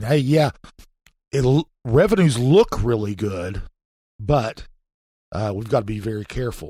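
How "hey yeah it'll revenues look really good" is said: ordinary delivery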